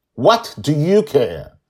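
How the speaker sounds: sharp, shrill snapping, very loud and very high. Reading a story aloud, a character answers an apology: snapping. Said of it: "she snaps at him".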